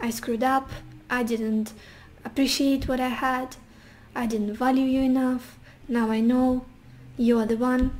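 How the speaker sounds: ordinary talk, nothing marked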